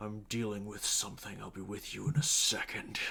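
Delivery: very low, rumbling growl deep in the throat. Voicing a figure strangling someone, answering a shout: very low growl. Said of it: "a very low growl".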